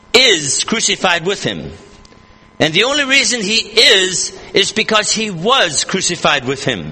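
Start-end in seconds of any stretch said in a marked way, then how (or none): 0.2-1.7 IS hit hard at the front. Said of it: "Note the present tense word".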